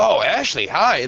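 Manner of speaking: thrilled, giddy, eager, excited voice. Imitating how a man greeted someone on a stream, with an excited greeting. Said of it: "Like the excitement in his voice".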